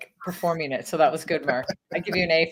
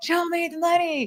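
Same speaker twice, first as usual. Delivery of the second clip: mock scream at very high pitch; 13 semitones higher than usual. Retelling a movie scene in a bathroom: imitating Cuba Gooding Jr. screaming. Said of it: "he's screaming it".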